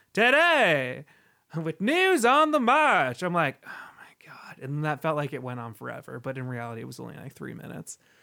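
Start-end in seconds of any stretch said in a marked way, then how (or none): 0.2-3.3 put-on loud, swooping old-time newsreel radio announcer voice. Recalling a guy who opened with the news, the speaker mimics his old radio voice. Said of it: "that old radio voice like".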